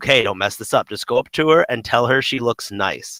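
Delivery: plain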